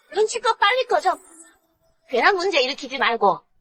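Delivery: shouting rudely. In a drama scene, one character yells at another, who says not to shout: rude yelling. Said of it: "여기서 소리 지르지 마".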